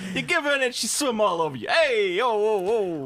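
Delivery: high-pitched fake Italian accent. Showing how Sebastian could be played: Italian Sebastian voice. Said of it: "an Italian, uh, Sebastian".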